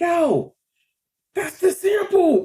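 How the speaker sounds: stretched, excited, amazed voice.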